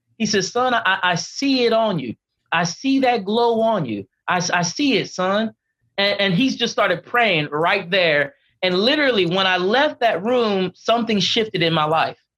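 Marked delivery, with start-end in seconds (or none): 0.5-5.6 slow, slight South Carolina country drawl. Retelling what a man from South Carolina told him, in a little country drawl. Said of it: "he has this little country draw".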